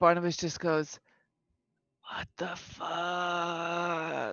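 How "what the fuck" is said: very quiet mutter under the breath, "fuck" drawn out. The storyteller voices Barnabas reacting to the crinkling sound, muttering under breath. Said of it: "just under his breath".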